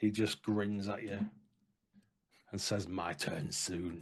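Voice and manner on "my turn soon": low, throaty, guttural growling voice. Voicing a wounded guard who grins back after a strike: guttural voice. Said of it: "in a guttural sort of voice".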